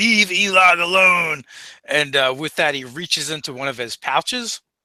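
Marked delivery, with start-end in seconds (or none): 0.0-1.4 loud shout, hollered over the shoulder. A character carrying someone over one shoulder turns at the waist: hollering. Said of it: "he hollers out".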